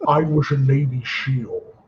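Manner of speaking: very slow, measured, deliberate, word-by-word delivery. Doing an impression of a former Navy seal politician: Jesse Ventura impression. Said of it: "You sound just like it".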